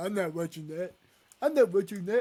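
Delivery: clumsy, unconvincing put-on grandfather voice. Imitating a granddad refusing to watch the video: bad granddad impression. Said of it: "that was a really bad impression".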